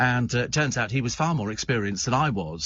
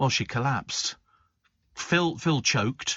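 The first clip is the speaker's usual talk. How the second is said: ordinary talk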